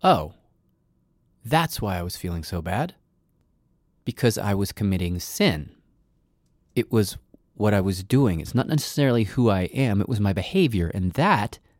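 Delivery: ordinary talk, nothing marked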